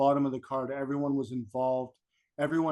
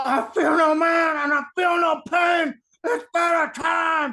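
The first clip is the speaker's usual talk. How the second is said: very high, loud wrestler's yell; 7 dB louder than usual. Come out in front of all the boys, with Vader sitting there, doing a yelling Vader impression. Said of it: "you're just going to pop into the Vader impression".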